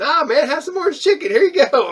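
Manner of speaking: high, loud, excited and eager.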